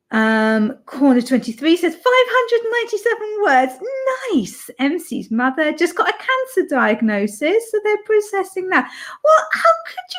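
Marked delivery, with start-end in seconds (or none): 0.8-8.9 cheerful, chipper, high and quick announcer-like voice. Reading out a comment during the writing sprints, in a happy voice. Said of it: "You got me to do like my happy voice".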